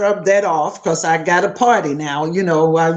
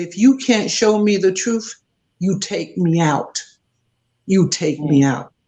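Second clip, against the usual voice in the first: angry, tearful, crying voice. Retelling an angry, tearful demand to God: retelling angry tearful demand. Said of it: "I'm mad, crying, ugly face, pacing".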